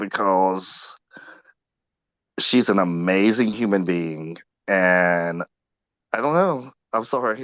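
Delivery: slightly teary, tearful, drawn-out voice. Talking about someone they have long known and made a deal with: getting a little teary. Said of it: "I'm getting a little teary".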